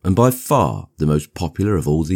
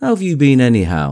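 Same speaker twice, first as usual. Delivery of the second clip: insistent, pressing, pitched-up demanding tone; 8 semitones higher, 3 dB louder than usual. Tom, just introduced to mr. gatsby, turns to the narrator: demanding. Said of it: "demanded Tom of me".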